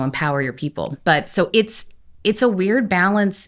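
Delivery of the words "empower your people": normal talking voice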